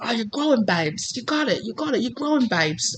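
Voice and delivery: soft, badly done put-on British accent. Voicing what an imagined british spirit guide keeps saying, bad british accent. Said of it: "I know that's a bad accent".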